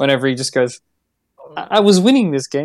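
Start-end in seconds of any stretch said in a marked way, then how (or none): 1.6-2.7 mock aggrieved, genuinely hurt, wounded tone. Telling how a game opponent reacts when losing, imitating Newt's hurt voice. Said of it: "There's this genuine hurt in Newt's voice".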